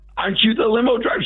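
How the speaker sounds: very high, shrieking, starstruck scream. Retelling a woman asking if he is the limo driver: imitating someone screaming. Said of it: "She's screaming at me".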